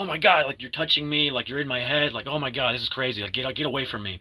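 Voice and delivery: frantic, panicked, rushed, freaked-out babbling. Retelling a movie scene where a girl is touched through a mirror: acting out Abra freaking out. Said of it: "Abra freaks out".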